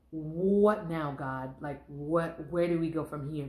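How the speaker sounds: put-on crying voice. Retelling walking from the mailbox after a terrible score: retelling own past crying. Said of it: "crying 'cause I just didn't know".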